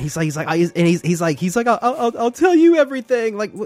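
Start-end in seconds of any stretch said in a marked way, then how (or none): 1.7-3.4 mock tearful, breaking-down crying voice. Retelling a movie scene where a character breaks down: imitating Tom Cruise crying. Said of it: "starts, like, Tom Cruise crying".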